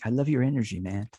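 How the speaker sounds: put-on old hippie voice. Host tells the author guest something, saying it like an old hippie. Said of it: "I'll say it like like an old hippie".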